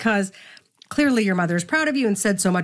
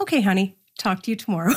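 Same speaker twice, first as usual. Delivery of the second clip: normal talking voice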